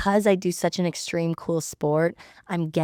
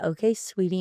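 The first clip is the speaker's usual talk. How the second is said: ordinary talk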